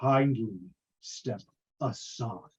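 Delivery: deep-throated, powerful male voice. Voicing a possessing presence that speaks through a girl: deep-throated powerful male voice. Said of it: "the voice of a man, deep-throated, powerful".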